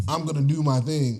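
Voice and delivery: normal talking voice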